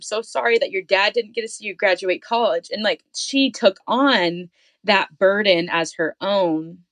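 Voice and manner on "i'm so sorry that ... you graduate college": put-on tearful, crying voice. Retelling what mom said many times about the lost dad: imitating crying mom. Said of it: "and crying".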